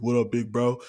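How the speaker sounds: put-on deep voice. Playing the little brother greeting his big brother back from college, deep voice. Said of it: "the deep voice".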